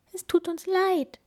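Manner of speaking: squeaky little mouse voice, very high. The mouse answers the bear who caught them with his books, squeaking. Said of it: "piepste die Maus".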